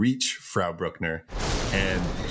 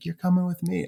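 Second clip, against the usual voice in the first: mock-calm voice, higher; 10 semitones higher than usual. Retelling a horror movie scene, imitating a calm character. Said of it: "she's just real calm".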